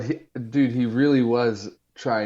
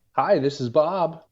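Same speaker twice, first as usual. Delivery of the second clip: pitched-up office work phone voice; 6 semitones higher than usual. Showing the voice used when taking a work phone call, work phone voice. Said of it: "my like work voice".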